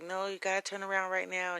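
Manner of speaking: acted-out paranoid, insistent yelling. Retelling a phone call, imitating him yelling at his mom. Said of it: "he's yelling at his mom".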